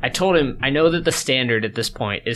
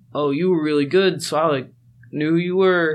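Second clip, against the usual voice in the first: put-on pitched-up voice of a random kid; 5 semitones higher than usual. Recalling kids they had never talked to, the speaker does an impression of a random kid. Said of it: "Your impression of a random kid was really good".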